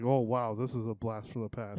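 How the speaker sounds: usual speaking voice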